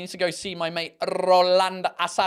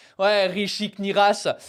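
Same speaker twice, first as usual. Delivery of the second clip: put-on French accent and pronunciation, faster. Guessing how french people would pronounce a name, in a french accent. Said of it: "French people would be like".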